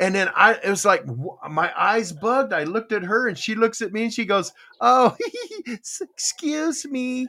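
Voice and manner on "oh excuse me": put-on small, sweet, pitched-up child voice. Retelling how she apologized after spitting a cherry pit: imitating a sweet little voice. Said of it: "She tried to get all little".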